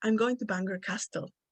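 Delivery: normal talking voice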